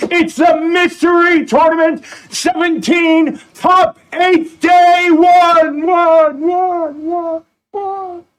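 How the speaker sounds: high, drawn-out hyped voice with extra gusto. Opening a tournament broadcast after a co-host's welcome: with more gusto. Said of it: "I'm gonna say it with more gusto".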